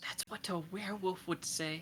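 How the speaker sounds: soft, hushed, whispered aside. Voicing Myrna as she leans to Arch: whispering. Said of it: "Myrna looks to Arch and whispers".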